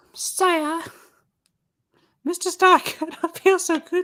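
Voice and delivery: very high, small, creature-like voice. Trading jokes with a listener who then praises the impression, the speaker uses a Gurgi voice. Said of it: "That's a remarkably good impression".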